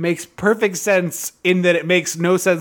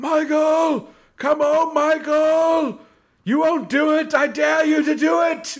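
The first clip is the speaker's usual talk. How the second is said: put-on shrill screaming, very high and drawn out; 10 semitones higher than usual. Retelling the scene where Loomis screams into the woods: imitating Loomis screaming. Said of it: "screaming into the woods".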